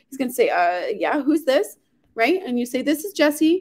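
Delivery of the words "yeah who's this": put-on, playing caught off guard. The speaker acts out a man answering a sales call, acting caught off guard. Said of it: "he's going to be caught off guard".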